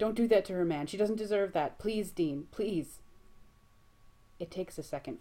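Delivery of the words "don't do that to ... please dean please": frantic panicked pleading, high, raised, between heaving breaths. Cornered on a couch, a man begs the other man, panicked begging. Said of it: "His chest heaves with panicked breathing".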